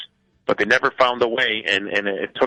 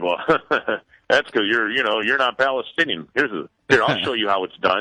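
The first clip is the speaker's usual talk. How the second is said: put-on arrogant tone. Retelling his own reply to the runners: imitating his own arrogant tone. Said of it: "going in there all arrogant".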